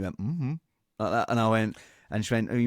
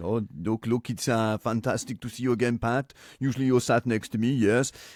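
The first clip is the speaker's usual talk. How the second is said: put-on French-accented football manager voice. Retelling doing an Arsene Wenger impression for a club director. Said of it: "do your Arsene".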